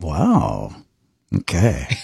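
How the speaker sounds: playful, flirty tone with swooping pitch. Saying the phrase again when asked for a different way: flirty. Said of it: "Can you say it in a flirty way?".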